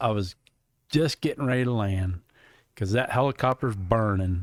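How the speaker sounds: normal talking voice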